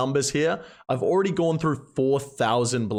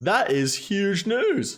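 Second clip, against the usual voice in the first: voice breaking, higher pitch; 6 semitones higher than usual. Announcing being a Scurrius champion on many accounts, voice cracking. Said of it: "My voice just cracked so bad".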